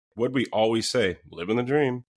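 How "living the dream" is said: mock sarcastic tone, higher pitch. Retelling what cops always answered when asked how they were: imitating a sarcastic reply.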